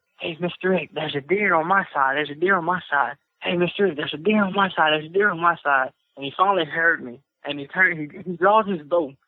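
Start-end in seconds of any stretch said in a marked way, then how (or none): 0.2-5.9 mock whisper. Retelling how a deer was pointed out to a hunting partner: retelling a whisper. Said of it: "I'm whispering at him".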